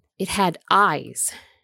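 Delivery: sharp, short, curt, cutting retort. A woman answers a man's doubting question, sharp. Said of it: "she said sharply".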